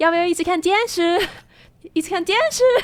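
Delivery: put-on high child voice. Remembering a tv example from when they were little, quoting it in a higher-pitched little-kid voice. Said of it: "higher pitched voice".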